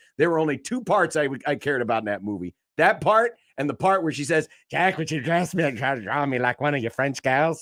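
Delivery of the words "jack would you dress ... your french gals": odd, exaggerated cartoon Canadian accent laid on thick. Quoting her line from one of the only two movie parts you cared about, odd Kate Winslet impression. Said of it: "Why'd you sound like a South Park Canadian?".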